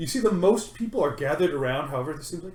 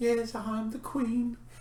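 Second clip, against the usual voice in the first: put-on attempted soft, high little girl voice; 8 semitones higher, 6 dB quieter than usual. Retelling a young girl dressed as a queen speaking; attempted little girl voice. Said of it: "I can't do a little girl voice".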